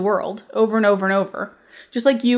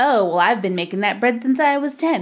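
put-on snotty, mocking voice. Reading out a comment from an online post: imitating a snotty commenter. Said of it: "You can only do one impression".

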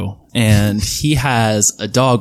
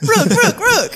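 very high squeaky creature cry, repeated. Repeating a character's name as a creature cry: saying it like a Pokemon. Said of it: "Why'd you say it like a Pokemon".

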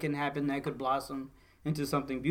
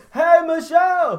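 shrill, very high, very loud yell; 15 dB louder than usual. Checking whether the music is too loud, the speaker calls out to Michelle, yelling. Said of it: "So I'm going to be yelling at you".

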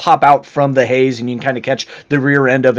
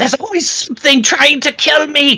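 shrill, very high, all-out scream, lungs emptied; 14 semitones higher than usual. Voicing a man fleeing wild boars: screaming at the top of his lungs. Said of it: "screaming kind of at the top of his lungs".

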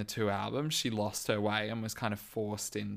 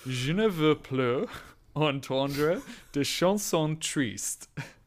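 slow, weird, deep put-on French accent. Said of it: "weird deep voice".

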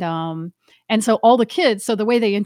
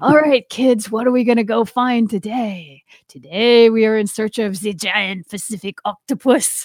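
bad, laid-on, put-on French accent. A diver shows how she talks on dives, phony French accent as Jacques Cousteau. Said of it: "Dial in my phony French accent".

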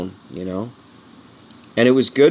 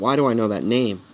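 ordinary delivery

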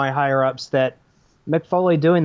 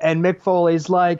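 usual speaking voice

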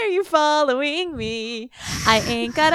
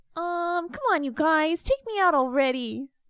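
put-on dog voice, quieter; 3 semitones lower, 6 dB quieter than usual. Speaker shows the voice they use when talking as their dog. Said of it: "I have like a dog voice".

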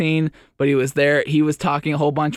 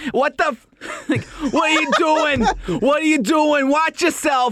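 put-on Boston island accent, pitched way up and drawn out; 13 semitones higher than usual. Describing drivers arguing in boston, the speaker acts one out: imitating an island accent. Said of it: "that's more of like a the island accent".

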